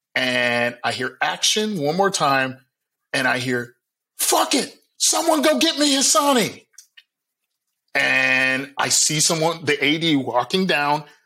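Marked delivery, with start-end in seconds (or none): 4.2-6.7 mock shrill screaming, very high-pitched. Retelling what a director yelled on a commercial shoot: imitating the director screaming. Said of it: "more screaming from the director".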